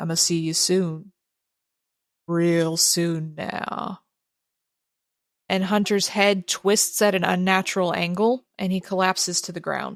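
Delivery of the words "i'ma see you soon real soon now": very deep, deep voice, spoken slowly. A narrator voicing a strangled man addressing the players, deep voice. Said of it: "he says in a deep, deep voice".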